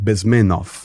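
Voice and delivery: Bezmenov with stress on the second syllable, men. Introducing Yuri Bezmenov to an audience: stress on second syllable of Bezmenov. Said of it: "second, second syllable".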